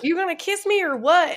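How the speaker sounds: put-on laid-on Southern Alabama accent. Retelling a woman's words as she runs out in her wedding dress, Alabama accent. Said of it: "Alabama accent in her wedding dress".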